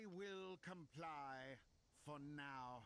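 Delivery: low, nasal evil-character voice. Voice-acted character in a scene, nasal evil villain voice. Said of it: "I love a very nasal evil character".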